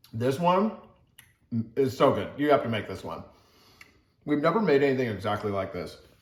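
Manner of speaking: talking while chewing, mouth full. Taking a big bite of the finished pasta, talking with mouth full. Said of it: "Let me finish chewing".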